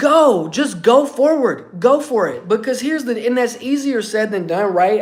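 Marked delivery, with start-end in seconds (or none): 0.0-2.5 mock slow, drawn-out, urging yell. Retelling screaming at the TV during the fight's last round: imitating own screaming. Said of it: "I was screaming at my T V".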